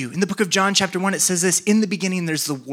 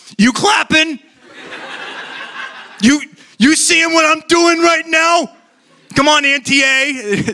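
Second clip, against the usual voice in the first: put-on very high, drawn-out, slow Boston accent; 10 semitones higher, 7 dB louder than usual. Retelling how she turned to the speaker's wife after everyone cheered: Boston accent. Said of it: "She has a Boston accent".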